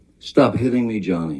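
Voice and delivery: high, upset, frightened, freaked-out cry. A witness testifies about Miss Heard screaming at Johnny, imitating her frightened scream. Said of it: "she's screaming in in her best um, freaked out, upset voice, high pitched".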